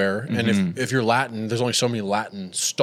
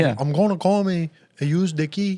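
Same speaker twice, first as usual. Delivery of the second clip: bad, deliberate, slow put-on Spanish accent, pitched up; 7 semitones higher than usual.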